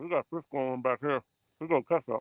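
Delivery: talking with mouth full. Speaker eating while out to catch fish, talking with mouth full. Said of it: "talking my mouth full".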